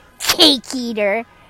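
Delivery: mock spitting hateful voice. Imitating a character's go-to insult: Jesse Hall spitting insult with hate. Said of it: "spits it at you".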